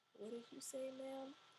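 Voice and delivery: soft, high, fake-groggy mumble, acted out. Retelling how they pretended to wake up when she called: retelling faking just waking up. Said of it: "I finally pretend to wake up".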